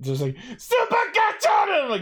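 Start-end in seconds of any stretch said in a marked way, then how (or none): 0.6-1.7 shrill, very high-pitched shout. Retelling how the hero announces his new form: imitating a character shouting. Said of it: "he shouts it".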